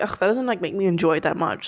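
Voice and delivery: ordinary delivery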